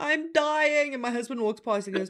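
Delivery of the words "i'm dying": mock screaming, higher-pitched. Retelling lying on the floor when sick: imitating own screaming. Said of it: "I lie on the floor screaming".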